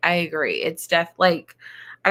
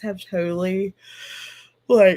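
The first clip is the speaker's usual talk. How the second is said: words spoken through a yawn. Speaker giving an update on a book, apologizing mid-sentence: yawning while talking. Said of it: "sorry for yawning".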